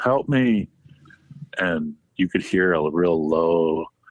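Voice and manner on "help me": play-acted, playful, half-joking, high-pitched shout. Retelling a hike, calling out toward splashing in a lake: imitating a joking yell. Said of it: "jokingly kinda yelled out".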